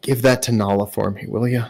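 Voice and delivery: hushed whisper. As he hugs Dove goodbye, the speaker voices the character whispering. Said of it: "Whispers in your ear".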